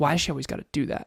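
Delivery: whispering voice. Retelling what a woman whispered to her partner: imitating someone whispering. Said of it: "I heard her whisper in his ear".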